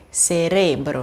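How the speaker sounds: cerebro with the re syllable stressed. Explaining the word stops being proparoxytone here: stress on re in cerebro. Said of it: "a sílaba tônica é re".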